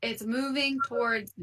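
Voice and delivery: loud in-character yell. Warning the party that the burrowing worm approaches: in-character yell. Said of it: "I'm gonna yell".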